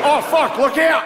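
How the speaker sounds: jokey, high, shouted Australian accent.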